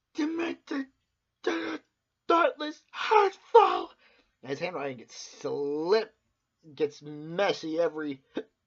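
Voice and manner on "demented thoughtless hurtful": very high, loud, furious string of words. Retelling a character writing a note while getting angry: imitating angry note-writing. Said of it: "he gets angry as he's writing the note".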